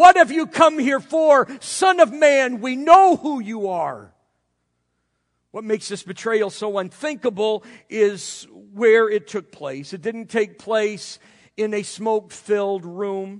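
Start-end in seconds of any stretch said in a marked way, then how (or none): 0.0-4.1 shrieking, shrill, loud demon voice. Speaker retells demons crying out from men and women, shrill demon voice crying out. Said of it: "in a shrill voice crying out".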